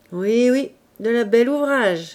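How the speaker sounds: jeering through a snicker. Reading the big-eared character's remark to the others: sneering murmur. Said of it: "murmura l'oreilleux en ricanant".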